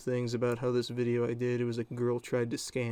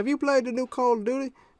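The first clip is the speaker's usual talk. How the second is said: put-on very high little-kid voice; 13 semitones higher, 6 dB louder than usual. Retelling a young kid who came up to him: imitating the kid's voice. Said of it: "I'm going to do the voice".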